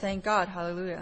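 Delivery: ordinary talk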